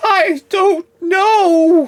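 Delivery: very high, very loud, scared and flustered. Game master voicing a wizard asked where she has gone, flustered and scared. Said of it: "Like really flustered right now because he's just like really scared".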